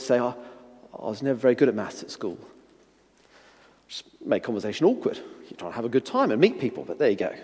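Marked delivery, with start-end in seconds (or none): 0.2-2.4 sheepish, slightly ashamed voice. Retelling what people said on hearing about the times tables, mock slightly ashamed voice. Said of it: "in a slightly ashamed voice".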